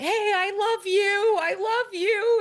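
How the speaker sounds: put-on, very high calling shout, stretched long. Retelling yelling to the trees while out in the woods, retelling a yell. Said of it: "I'm like yelling to the trees like".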